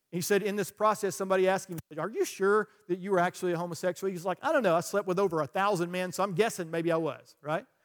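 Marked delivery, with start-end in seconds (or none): none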